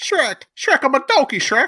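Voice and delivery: high-pitched squeal, pitch jumping all over. Asked whether Cozart owns a donkey, the speaker tries a terrible Donkey from Shrek impression. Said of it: "That's a terrible impression".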